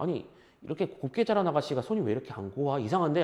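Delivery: low, soft, puzzled murmur.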